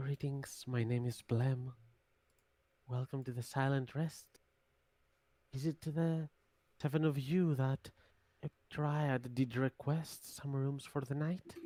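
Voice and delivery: quiet hushed voice. Greeting a group of seven arriving for rooms, speaking in Blem's quiet voice. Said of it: "will say in a pretty silent voice".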